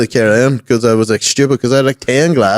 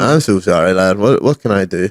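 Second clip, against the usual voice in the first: ordinary talk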